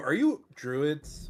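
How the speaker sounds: loud, called-out shouting in character. Playing a druid who leans over to strangers and asks them: shouting in character. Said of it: "as he sort of shouts that out".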